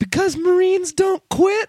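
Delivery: put-on high-pitched, slow little kid voice. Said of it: "And the kid's like".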